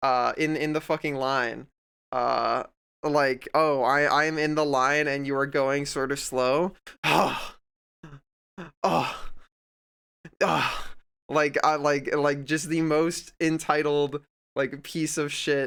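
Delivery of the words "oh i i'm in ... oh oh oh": mock passive-aggressive, impatient huffing and puffing. Retelling how a customer in line acted: imitating passive-aggressive huffing. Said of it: "huffing and puffing, like, passive aggressively".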